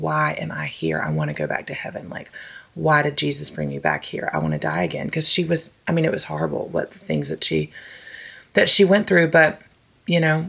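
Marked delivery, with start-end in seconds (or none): 0.0-5.1 very low, quiet, hushed, pleading sobbing. Recounting what a woman said many times after her suffering, retelling her sobbing. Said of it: "would be sobbing".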